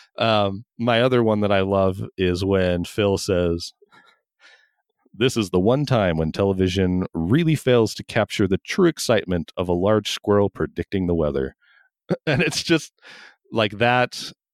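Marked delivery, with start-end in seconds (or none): none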